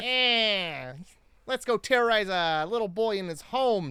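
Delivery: put-on high Italian mobster accent, stretching the "eh". Comparing Joe Pesci and Bugs Bunny with a co-host, in a Joe Pesci impression. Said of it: "You can hear Joe Pesci saying that".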